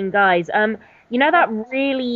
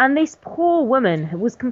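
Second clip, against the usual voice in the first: plain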